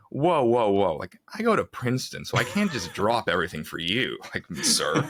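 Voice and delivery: proud, puffed-up, self-important, swooping boastful tone. Retelling own reply to an offer to sign: imitating saying it proudly. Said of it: "with pride".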